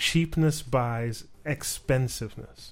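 ordinary talk

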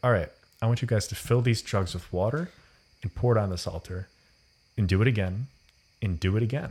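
ordinary talk

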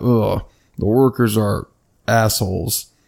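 put-on, mumbled delivery. Retelling an incident with annoyed workers, the speaker quotes a friend, retelling a mumble. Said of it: "he mumbled".

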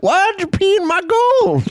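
grumpy, disgruntled gold prospector voice, very high-pitched. The host slips into a character bit, in a disgruntled prospector voice. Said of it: "Your disgruntled prospector".

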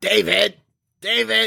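distinctive movie-star voice, very high and creaky. Doing the impression the others asked for: an actor's distinctive voice. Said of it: "Jeremy can do a really good impression of".

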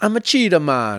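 put-on Jamaican accent. Asked what accent it was, repeating the line in put-on Rastafarian accent.

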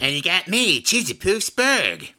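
very high, swooping, sing-song bad cartoon voice. A third player introduces themself on a game review show, terrible Cartman impression. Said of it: "That was my terrible Cartman impression".

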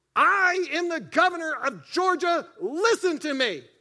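deliberate, booming, loud, high, drawn-out bellow. Telling how a man banged on the table and spoke up: retelling a booming bellow. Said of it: "A booming voice came out and said".

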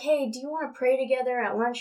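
ordinary talk

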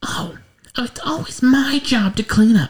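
very high whiny feminine voice. Narrating a story, voicing an overheard complaint in a whiny high soprano voice. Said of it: "a much whinier voice... highest soprano".

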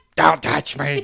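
voice turned demon-like. Acting out how the other speaker once refused to be touched, demonic voice. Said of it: "a demonic, your voice would change".

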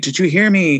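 plain

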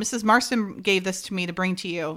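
ordinary talk, nothing marked

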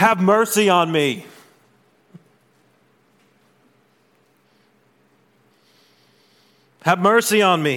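mock pleading cry, high and drawn out. Retelling a man in a hushed crowd, imitating him crying out for mercy. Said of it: "there's this guy in the back crying".

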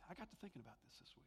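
hushed, fast, unvoiced whisper.

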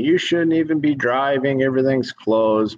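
high-pitched hollering voice. Retelling the gas station lady hollering at him, imitating a lady hollering. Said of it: "the lady at the gas station's hollering at me".

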